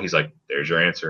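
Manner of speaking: mock deadpan, flat delivery. Retelling what a man answered, imitating his deadpan reply. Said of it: "like deadpan all that".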